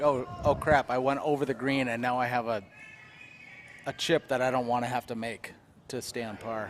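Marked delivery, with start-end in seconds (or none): none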